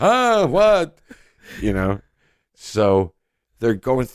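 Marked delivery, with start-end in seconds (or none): 0.0-1.0 put-on old man voice, higher and louder.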